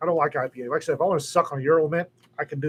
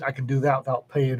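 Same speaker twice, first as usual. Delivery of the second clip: ordinary delivery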